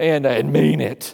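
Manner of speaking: rough, low, menacing demonic growl. Acting out pushing a child to apologize to another kid, devil voice. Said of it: "That devil voice comes out from the inside".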